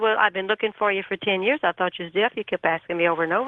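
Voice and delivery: ordinary talk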